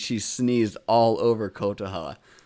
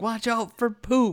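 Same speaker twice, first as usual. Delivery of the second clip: put-on shrill, very high, loud, sudden blurted yell; 12 semitones higher than usual. Speaker retells Sat-chan's one line in the investigation, imitating Sat-chan shouting loudly. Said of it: "really loudly".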